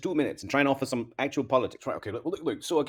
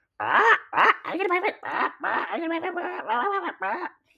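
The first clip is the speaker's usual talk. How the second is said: terrible squawky parrot voice, very high, slow, drawn out; 3 dB louder than usual. Trying to get the bird out, the speaker does a terrible parrot impression. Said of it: "That's a terrible part impression".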